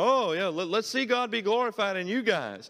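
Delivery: high mock cry dripping with sarcasm. Acting out what the scornful brethren said: imitating a sarcastic cry. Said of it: "the sarcastic cry of these people".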